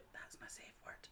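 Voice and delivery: hushed, close, secretive whisper. Retelling what a coworker whispered in the speaker's ear: retelling a whisper. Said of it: "Pure whispered in my ear".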